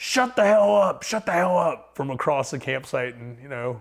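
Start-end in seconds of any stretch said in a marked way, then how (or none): 0.0-1.9 high-pitched, loud shouting. Retelling a man across the campsite yelling at the rowdy group, imitating a man yelling. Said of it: "this guy yells out to us".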